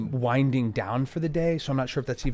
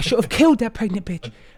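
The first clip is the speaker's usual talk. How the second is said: vicious, loud, high, aggressive character outburst; 9 semitones higher, 6 dB louder than usual. Voicing a character furious that the odds maker is gone: aggressive in-character line. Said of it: "That was in character".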